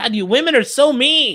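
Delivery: high, loud mock outrage.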